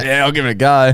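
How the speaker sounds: plain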